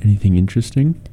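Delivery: hushed stage whisper. A player's character ambles over to a companion and asks, in a very hushed voice. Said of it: "in a very like hushed voice".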